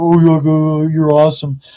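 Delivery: loud, creepy, gushing voice with drawn-out oh. Speaker explaining why they held back after recognizing a woman, creepy fan impression. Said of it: "That's my creepy fan impression".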